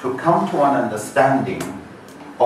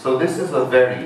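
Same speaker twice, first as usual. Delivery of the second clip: heavy stress on the word very. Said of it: "underline the word very".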